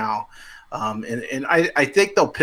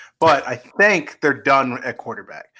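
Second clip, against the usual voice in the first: think stressed and said slowly. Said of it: "I'm gonna stress the word think".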